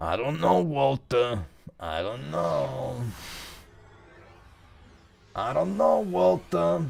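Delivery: rough, creaky, slow, drawn-out dog voice. The speaker voices what the dog is saying right now, imagined dog voice. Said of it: "That's what he sounds like".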